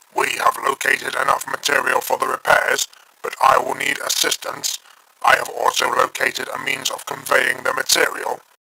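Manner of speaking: dead serious, warrior-mode delivery. Reading a story aloud, voicing the Dalek in full warrior mode. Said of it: "[name] was in full warrior mode. Until this point he wasn't sure the Dalek had a serious side to him. / [name] was in full warrior mode. / [name] was working on a hole patch when [name]'s call came th".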